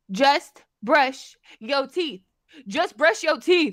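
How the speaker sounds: put-on sassy woman's yell. Retelling how a woman got in the speaker's face, imitating a sassy woman yelling. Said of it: "a sassy woman yelling at you".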